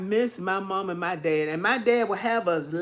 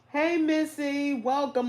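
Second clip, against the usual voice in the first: teary, spoken through tears; 7 semitones higher, 3 dB quieter than usual. Host greets a viewer after reminiscing about their dad: teary voice. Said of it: "I'm trying to look past my tears".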